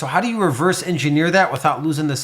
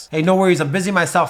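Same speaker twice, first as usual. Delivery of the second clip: self-assured, confident, precise, to-the-point delivery; 2 semitones higher than usual. Demonstrating how to say something so people believe you, quick, confident delivery. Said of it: "you say it quick, fast, and precise".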